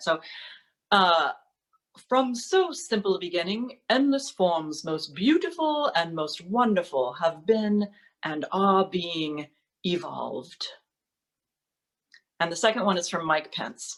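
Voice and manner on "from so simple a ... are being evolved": put-on English-accented voice. Quoting the very last line of Origin of Species, in an English accent as Charles Darwin. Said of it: "with an English accent".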